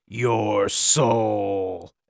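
demonic growling voice with "soul" drawn out. Narrating a scene, a demonic woman turns on Janice, growling demon voice. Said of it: "Did I do a good demon?".

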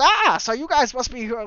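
put-on elderly gold-miner character voice. Narrating a scene, voicing an old prospector who addresses the group, in character voice. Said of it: "He goes".

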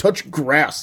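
angry, mad, furious voice. Showing how to tell people inside to touch grass, mad, furious tone. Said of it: "You got to say it like that. ... you got to be like mad that they're inside. Just like furious".

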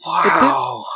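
shocked, surprised delivery.

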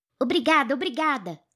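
high, loud shouted call. A child thanks her mother before rushing off; shouting. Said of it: "gritou Mink".

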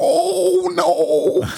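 very high, constantly frightened cartoon character voice. Recalling different characters with someone, do the next one, imitating an always-scared character. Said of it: "the one that was always scared".

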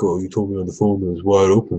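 mock-angry, complaining tone. Retelling how a golfer who phoned earlier came in complaining: imitating an angry golfer. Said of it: "he's all mad because he's like".

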